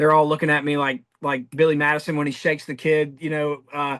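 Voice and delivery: normal talking voice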